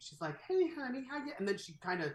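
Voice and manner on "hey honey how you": very high, sugary-sweet, coaxing tone. Retelling a film scene where a character climbs a hill: imitating a real sweet tone. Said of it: "being real sweet".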